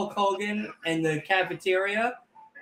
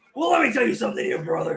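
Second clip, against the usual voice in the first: high, twitchy delivery with pitch swooping all over; 5 semitones higher than usual. Showing the others a Hulk Hogan impression. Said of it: "There you go".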